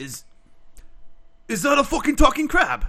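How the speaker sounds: put-on sudden Scottish accent, a bit high. The speaker voices Fern spotting a talking crab, in a sudden Scottish accent. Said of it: "Did you just change accent?".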